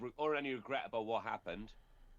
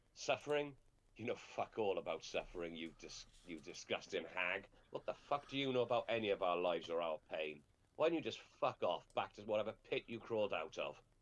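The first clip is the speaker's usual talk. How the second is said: scornful, contemptuous sneer dripping with disgust; 3 semitones lower than usual. A man sneers in a woman's face, answering her taunt, sneering. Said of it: "He just sneers in her face and goes".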